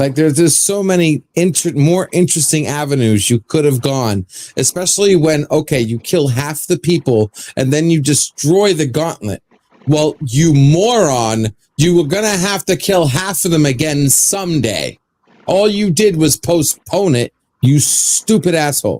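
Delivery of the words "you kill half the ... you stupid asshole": furious angry rant, moron drawn out. Ranting about a movie ending, angry ranting. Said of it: "I'm really pissed off at that movie".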